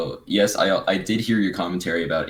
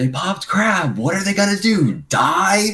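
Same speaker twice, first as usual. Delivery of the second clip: acted booming, very high, shrill call, long fade; 13 semitones higher, 4 dB louder than usual. Recounting what a teammate said during a match against Last Resort; retelling a really loud remark. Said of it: "Like in a really loud voice".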